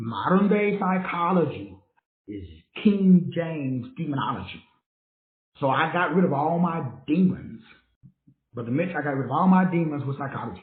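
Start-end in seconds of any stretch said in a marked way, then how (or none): 0.0-4.6 drawn out word by word, very slow and deliberate. Speaker repeats his point slowly for the listeners in the back: very slow. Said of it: "Let me say that really slow".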